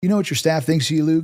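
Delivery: put-on Texas accent. Luke retells meeting Tillman, who speaks to him in a Southern charm Texas voice. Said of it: "in this beautiful Southern charm, Texas voice".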